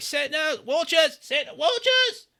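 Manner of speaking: shouting. Narrating a courtyard commotion, the storyteller voices people raising the alarm: shouting. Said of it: "shouting like".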